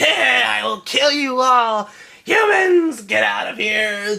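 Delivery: very high, slow, dragged-out giant spider voice. Retelling a scene where a giant spider appears: imitating a giant spider. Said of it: "this giant fucking spider that comes out like".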